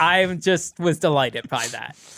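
ordinary talk, nothing marked

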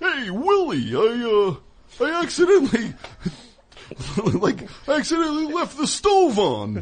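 high, swooping put-on voice. Imitating Alf confessing a mistake to Willie: Alf voice. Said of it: "'cause Alf would be like".

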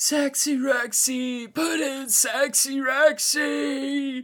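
very high, raspy smoker's voice, hollered, one word drawn out. Retelling a smoker yelling in the stands at a Packer game, imitating a guy's raspy yell. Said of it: "the guy was yelling like".

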